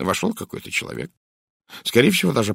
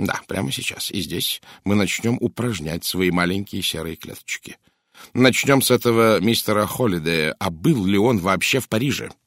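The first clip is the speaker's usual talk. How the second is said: ordinary delivery, nothing marked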